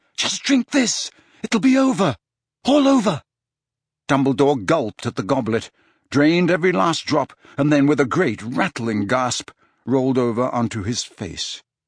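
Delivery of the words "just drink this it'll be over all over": gasping, very high pitched. Reading Harry urging Dumbledore to drink, gasping. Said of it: "gasped Harry".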